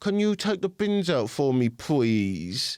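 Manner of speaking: put-on slow, sweet, cutesy baby voice. Describing how his wife asks him to take the bins out, imitating a baby voice. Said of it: "that baby voice trick".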